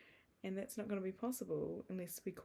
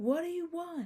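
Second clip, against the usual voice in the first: shrill, full-throated, very loud, high scream; 9 semitones higher, 9 dB louder than usual. Retelling a film scene where the character shouts: imitating Ryan screaming. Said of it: "Ryan just screams".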